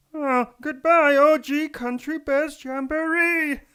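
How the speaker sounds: very high, very loud, shrill, drawn-out character voice. Reading a listener's message aloud as promised: Pee Wee Herman voice. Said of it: "read the next few messages in the style of Pee Wee Herman".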